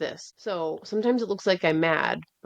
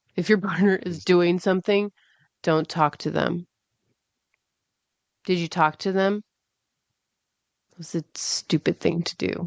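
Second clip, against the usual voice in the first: put-on flat deadpan voice. Retelling what a woman said, imitating her deadpan. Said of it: "It's like this deadpan".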